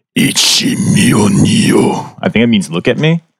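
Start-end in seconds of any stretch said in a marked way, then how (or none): 0.2-2.2 menacing, very threatening tone. Pointing toward a growling creature, the player's character tries to intimidate it: very threatening tone. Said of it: "in a very threatening tone to try and intimidate this thing".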